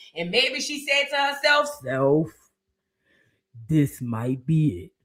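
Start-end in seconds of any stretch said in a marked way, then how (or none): 1.8-4.8 very deep baritone voice. Imagining what she said to herself alone: deep baritone voice as Kandi. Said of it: "got deep down in her baritone voice".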